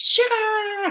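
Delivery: very high, very loud, stretched, booming talk-host call. Recalling her daily video intro, announcing the topic in her Oprah voice. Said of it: "I like to use my Oprah voice there".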